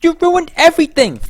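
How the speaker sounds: bratty, whiny put-on child voice. Trying out more bratty character lines, bratty, whiny put-on voice. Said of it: "I could try more bratty lines".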